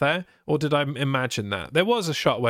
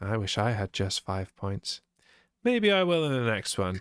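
creepy delivery, lower pitch; 3 semitones lower, 3 dB quieter than usual. Predicting points in a match-scoring chat, said really creepily. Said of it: "Why did you say that really creepily?".

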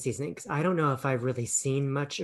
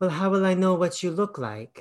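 put-on Russian accent, higher pitch; 4 semitones higher, 4 dB louder than usual. Reviewing a film, quoting Michelle's line about their first meeting in a Russian accent. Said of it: "That's my Russian accent".

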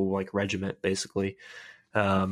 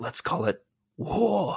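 slow, pitched-up iconic drawl; 8 semitones higher than usual. Retelling a scene from the episode: Forest Whitaker voice. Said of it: "just that iconic Forrest Whitaker voice".

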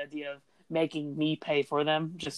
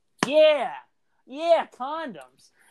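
put-on emphatic tone, higher pitch; 9 semitones higher than usual. Retelling slamming items on the conveyor belt: imitating own emphatic line. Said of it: "emphatically, not, like, angry".

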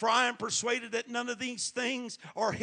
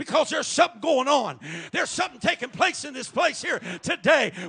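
screaming, shouting preacher delivery; 3 semitones higher, 8 dB louder than usual. Preacher speaking to the congregation, screaming. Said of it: "You know why I'm screaming like I am?".

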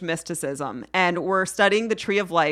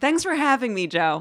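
high, formal radio-host voice. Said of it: "You did it again".

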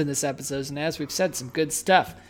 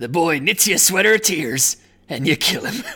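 cartoon pirate crab voice. Trying out cartoon character voices on a line, doing a Mr. Krabs voice. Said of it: "It's just a pirate voice".

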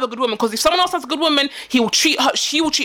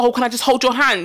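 mock pleading, begging tone; 2 semitones lower than usual. Retelling how a cheating boyfriend begged: imitating someone begging. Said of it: "Why are you begging?".

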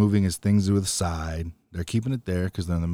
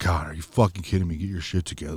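mock-frustrated, put-on angry, pissed off; 2 semitones lower than usual. Retelling what a man said to someone holding up the line; mock-frustrated, pissed off. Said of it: "getting all frustrated, getting all pissed off".

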